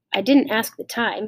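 ordinary delivery

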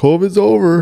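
very high, celebratory, top-of-the-lungs scream. Retelling a man on top of a car waving a flag, imitating a man screaming. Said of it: "screaming at the top of his lungs".

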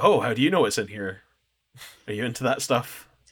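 put-on courteous, polite, friendly, interested, engaged tone. Retelling what the delivery guy asked: imitating someone polite and nice. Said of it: "being really polite and nice and engaged".

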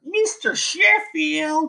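called out sky-high in nanny voice. Ranking annoying TV women, doing a voice: Fran Drescher nanny voice. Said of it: "I gotta give you a voice like".

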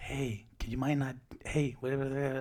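soft, hushed half-whisper. Retelling how coworkers in a quiet office talk: imitating coworkers half-whispering. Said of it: "just whispering".

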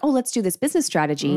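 ordinary delivery

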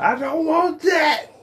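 put-on extremely loud, very high, shrill, drawn-out kid voice. A parent complaining about their kids acts one out, imitating a kid yelling. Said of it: "you get extremely loud about it".

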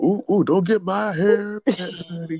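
exaggerated put-on countrified drawl, high and slow. Retelling how coworkers mocked a TV star: imitating an overly countrified voice. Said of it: "this overly countrified voice".

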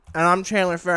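talking with mouth full. Podcast co-host introducing self at the show's start, talking with mouthful of almonds. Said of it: "and I still have a mouthful of almonds".

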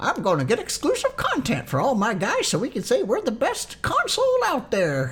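very high, sing-song, swooping put-on caricature voice. Talking about a PlayStation-only game, the speaker acts out Sony in a Sony voice. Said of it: "that's my Sony voice right there".

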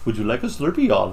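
Indian accent blended with Southern American twang. Taking up a challenge to mix an Indian accent with a Southern one: Indian-Southern mixed accent. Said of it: "Some Indian guy at a 7-Eleven in the South".

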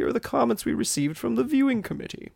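very high, snotty Victorian voice, American or British. Reading out the judges' feedback as asked: snotty Victorian American British voice. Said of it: "really snotty Victorian American British".

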